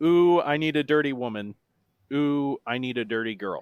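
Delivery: deadpan monotone reading. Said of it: "said in my best monotone voice".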